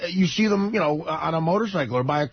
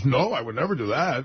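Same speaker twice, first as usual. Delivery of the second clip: real smug, self-satisfied, know-it-all tone; 4 semitones lower than usual. Retelling Teddy's answer about paying back some money, imitating Teddy being smug. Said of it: "like, real smug".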